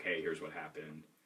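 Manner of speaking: ordinary talk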